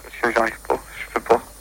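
soft, scared, trembling voice.

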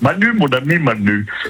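alien character voice.

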